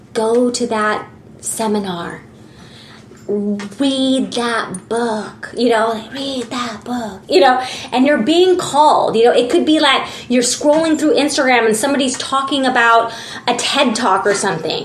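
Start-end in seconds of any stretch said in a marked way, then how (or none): 0.1-7.2 much softer, whispered, urging voices. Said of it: "whispering in your ear".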